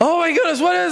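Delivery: shocked, panicked gasp.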